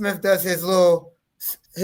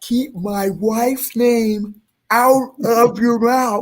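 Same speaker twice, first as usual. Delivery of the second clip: slow, pitched-up, over-enunciated, every word separate; 5 semitones higher than usual. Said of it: "he says it so enunciated".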